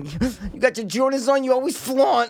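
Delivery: slow, loosely Italian-flavored comic drawl. Mimicking the other speaker's earlier bit, which sounded like Chris D'Elia. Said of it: "you sound like Chris D'Elia".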